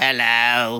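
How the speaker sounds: put-on British accent. Challenged to name an accent, a co-host shows off a British accent.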